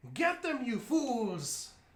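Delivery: high, shrill, yelling villain voice. After the eclipse has happened, she calls over at the audience, shouting. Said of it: "she shouts over at the audience".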